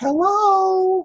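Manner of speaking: squeaky, very high-pitched, drawn out. Retelling how Danica opened the door to a visitor, in Danica's high squeaky voice. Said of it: "she got a kind of a high-pitched, squeaky voice".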